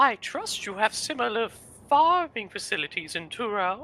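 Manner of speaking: overly sweet, sugary fairy godmother voice. Voicing the princess in a game dialogue: overly sweet fairy godmother voice. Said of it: "overly sweet fairy godmother kind of thing".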